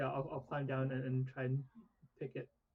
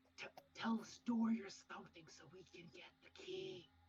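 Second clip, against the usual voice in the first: theatrical stage whisper, hushed but projected to carry; 6 semitones higher, 6 dB quieter than usual. Speaking in character to Orin near the guards, in a stage whisper. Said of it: "I'm gonna like stage whisper to Orin".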